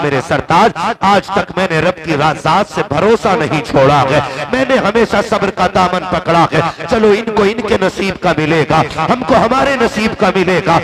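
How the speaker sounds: normal talking voice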